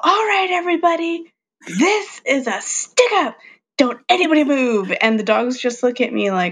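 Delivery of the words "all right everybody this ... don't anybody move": play-acted shrill, very high, loud holler. Retelling how the speaker greets the dogs: imitating a yell. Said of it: "I yell".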